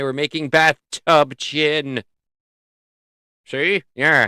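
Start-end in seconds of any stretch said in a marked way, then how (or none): 3.5-4.3 put-on loud, punchy, old-fashioned 1930s-style speech. Musing about favorite decades, showing how people in the 30s talked: 1930s-style talk. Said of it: "Isn't that the 30s when they talk like that?".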